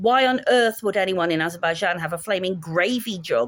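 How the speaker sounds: normal talking voice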